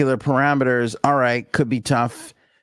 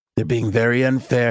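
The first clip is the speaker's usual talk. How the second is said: put-on whispery voice. Showing listeners how Trump whispers more now, in a whispering Trump impression. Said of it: "It's a lot more of the whisper Trump".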